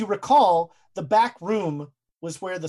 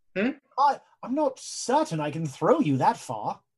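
upper-class British ape voice. A player voicing the gorilla Tuntun answering a request to be carried: posh British accent. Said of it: "this gorilla is like in a posh British accent".

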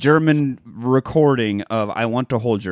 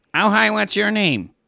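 pitched-up, notch-higher, friendly politician-style small-talk voice; 9 semitones higher than usual. Imitating a politician greeting people in a restaurant: Ron DeSantis impression. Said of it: "That's my DeSantis impression".

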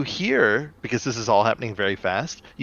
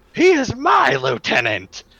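put-on angry childish voice, higher and louder; 13 semitones higher, 5 dB louder than usual. Retelling a cartoon scene, voicing Terrorsaur angry like a child.

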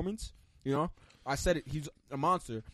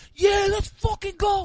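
put-on scream, higher and louder; 10 dB louder than usual. Retelling cheering in a silent crowd at a fight: imitating own screaming. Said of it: "I'm screaming".

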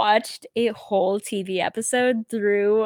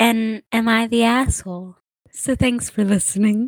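put-on soft-spoken voice. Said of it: "I like doing, like, the soft voice".

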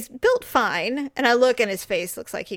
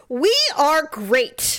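mock over-the-top talking, higher; 5 semitones higher, 3 dB louder than usual. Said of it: "they kind of overact a bit".

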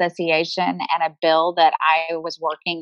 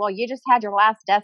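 plain

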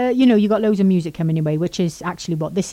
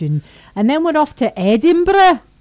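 bad fake Scottish accent, higher, faster; 9 semitones higher, 5 dB louder than usual. Co-host putting on an accent, then apologising for it: bad Scottish accent. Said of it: "Again, I apologise".

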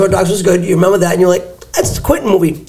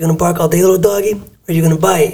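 put-on calm, cool, collected voice. Retelling a film scene where another man yells and points a gun: mock-calm Michael Madsen impression. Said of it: "and calm, cool, and collected".

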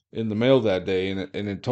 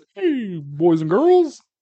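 very high, loud, slow, drawn-out cartoon-dinosaur voice; 11 semitones higher, 5 dB louder than usual. Acting out Barney walking around with little arms: Barney voice. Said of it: "'cause he's Barney".

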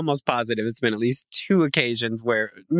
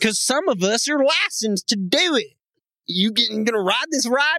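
vague affected accent, thrown on, pitched higher; 8 semitones higher than usual. Joking about being licensed to do it, in a put-on accent. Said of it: "What is this accent you're throwing at me?".

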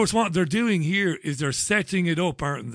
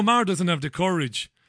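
ordinary talk

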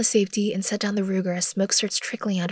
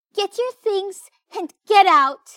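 put-on too-high childlike voice; 12 semitones higher, 6 dB louder than usual. After slapping the narrator, a girl orders them out, in a too-high child voice. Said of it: "M says in her too high child voice".

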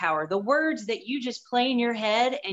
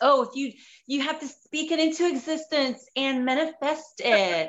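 silly, goofy, put-on girlish voice; 3 semitones higher than usual. A texas speaker shows off a goofy girl impersonation. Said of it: "I can do a darn good goofy girl impersonation".

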